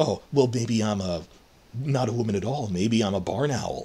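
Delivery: put-on sugary, coy, cloying, seductive tone, half sarcastic. Comparing two actresses' readings, imitating the other actress's coy, alluring reading. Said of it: "alluring, I guess the word is cloying, coy".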